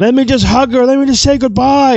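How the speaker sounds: high-pitched, full-volume screaming. Retelling a scene where cops hold a father back, imitating a father screaming. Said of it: "He's screaming".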